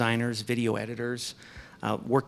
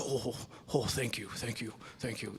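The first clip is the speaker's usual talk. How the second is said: gentle, soft, hushed half-whisper stage whisper; 9 dB quieter than usual. Retelling a man thanking people while shaking hands: Ronnie's half-whisper tone voice. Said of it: "his, his whisper tone voice".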